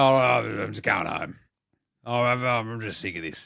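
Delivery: put-on old bloke voice. Describing the Raiders giving up: imitating an old bloke. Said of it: "like an old bloke just go".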